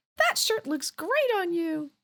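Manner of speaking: really high-pitched voice. Telling a bar joke, voicing the voice a man hears, in a really high-pitched voice. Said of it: "hears this really high pitched voice".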